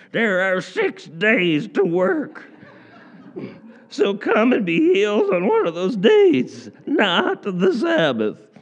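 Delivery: very high, swooping, cranky complaining voice. Reading out the synagogue ruler's words to the people, in a put-on cranky voice. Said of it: "I don't know if I can mimic a good cranky voice".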